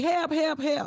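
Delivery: mock crying out. Recounting a viral incident, you act out a woman running and calling out for help, imitating crying for help.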